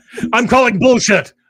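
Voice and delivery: loud, high-pitched voice.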